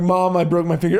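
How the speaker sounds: put-on tearful crying. Retelling telling Mom at the hospital about a broken finger, imitating own crying. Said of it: "I'm crying".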